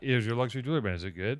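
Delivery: soft, mellow voice. Imitating the other speaker asking Heavy questions: imitating a mellow tone. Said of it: "your tone is so mellow and you're like".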